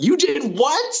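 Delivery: mock, very high-pitched, angry, furious disbelief. Recounting being signed up for the school play, the speaker retells an angry reaction. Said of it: "I was so mad at her".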